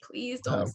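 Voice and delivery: desperate pleading voice. Retelling praying in a bathroom while hearing the music: retelling a desperate prayer. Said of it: "praying in the bathroom".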